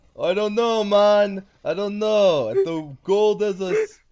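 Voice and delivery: put-on high, loud Jamaican accent. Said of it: "why do I sound like Meatwad?".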